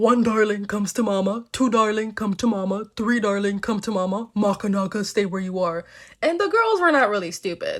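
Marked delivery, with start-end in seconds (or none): 0.0-5.8 low-pitched demon voice. Telling the story, Koya knocks at the daughters' door and calls them; low-pitched Koya voice. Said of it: "My mom has a very much higher pitched voice".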